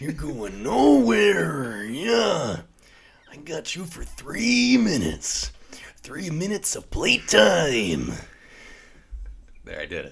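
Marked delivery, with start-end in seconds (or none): 0.0-8.1 very loud, high-pitched, belted wrestler voice. Deciding to do a wrestler impression, speaking in a Macho Man voice. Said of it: "I got to do the Macho Man voice".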